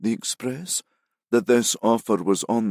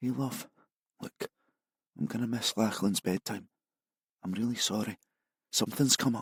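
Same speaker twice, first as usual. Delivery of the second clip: half-whispering in hushed, quiet tones; 8 dB quieter than usual. [name], on the phone to Isla while keeping to the shadows, in hushed tones. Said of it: "In hushed tones".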